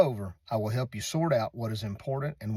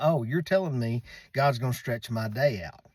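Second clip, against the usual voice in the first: heavy, scoffing, put-on sarcasm. Retelling own reply to her advice about going to god: retelling a sarcastic remark. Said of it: "I was real sarcastic about it".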